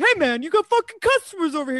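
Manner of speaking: put-on brash, shrill, very high New York accent hollering. Retelling a New Yorker shouting at a guy ignoring customers, imitating someone yelling. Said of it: "He's like yelling at him".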